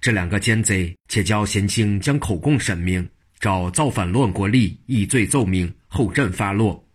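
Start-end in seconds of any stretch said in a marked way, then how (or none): none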